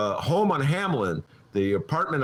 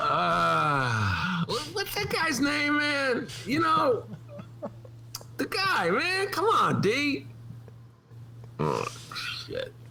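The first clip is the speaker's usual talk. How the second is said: mock stoned rambling, pitched higher; 13 semitones higher, 3 dB quieter than usual. Doing an imitation of himself hosting a show stoned: imitating himself stoned. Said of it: "doing the impression of you stoned".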